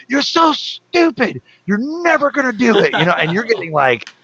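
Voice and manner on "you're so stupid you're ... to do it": put-on shrill drill-instructor scream, very high. Retelling how a senior drill instructor yelled at trainees: imitating a drill instructor screaming. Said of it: "screaming at you like".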